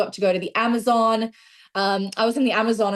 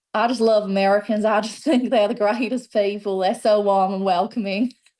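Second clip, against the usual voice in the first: light attempt at Southern American accent. Trying an accent to answer what they love about america: put-on southern american accent. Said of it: "let me try and do a bit of a southern accent".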